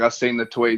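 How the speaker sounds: ordinary talk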